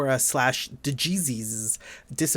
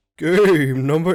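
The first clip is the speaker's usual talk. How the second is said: spooky voice, much louder; 3 semitones higher, 10 dB louder than usual. A game reviewer introduces the next game, in a spooky voice. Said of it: "Why are you doing a spooky voice?".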